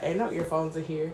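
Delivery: soft, quiet, annoyed tone. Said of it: "She's like".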